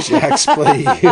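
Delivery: mock announcer voice, belted out high and loud.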